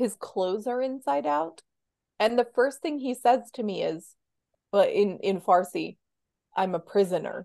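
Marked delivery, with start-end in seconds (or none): 6.6-7.4 put-on small, quiet voice, lower. Retelling what a father said when picked up: imitating a quiet, small voice. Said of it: "really, like, quiet, small voice".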